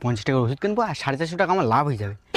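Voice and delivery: very low, sly, scheming muttered aside.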